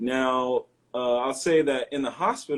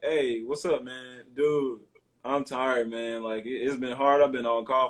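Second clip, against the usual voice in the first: laid-back, relaxed, casual easygoing voice. Explaining code switching, the speaker demonstrates a laid-back casual voice. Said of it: "more laid back".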